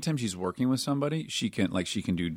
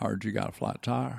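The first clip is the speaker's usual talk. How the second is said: rough, creaky movie-star voice; 4 dB quieter than usual. Doing an impression in a chat about car commercials: Matthew McConaughey impression. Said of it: "Did you know you could do this impression?".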